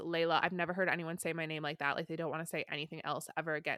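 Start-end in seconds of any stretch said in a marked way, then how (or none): none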